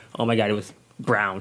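usual speaking voice

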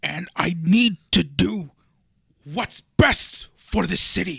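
very loud, very slow drawl, each word boomed. Showing how a character talks: Kingpin impression. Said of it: "he talks like this".

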